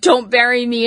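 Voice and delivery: ordinary talk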